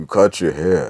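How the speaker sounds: very low, deep, dead-serious tone. Retelling a movie scene where a character speaks, imitating a serious movie character. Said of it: "he's just sitting there like".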